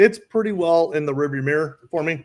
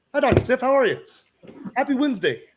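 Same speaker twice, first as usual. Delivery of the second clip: bold, outspoken, loud, high voice; 9 semitones higher than usual. Redoing a greeting to the doctor after a flat first try, loud and outspoken. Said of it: "normally loud and outspoken".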